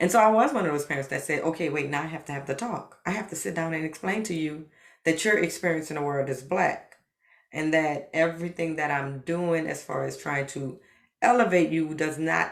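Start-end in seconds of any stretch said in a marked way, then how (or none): none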